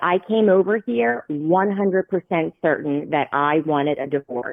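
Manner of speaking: ordinary talk, nothing marked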